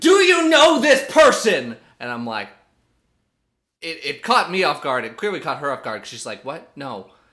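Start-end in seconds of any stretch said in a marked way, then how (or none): 0.0-1.8 very high, very loud, shrill top-of-lungs yell. Telling a listener how a man yelled at a woman, retelling a yell. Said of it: "He yelled at the top of his lungs".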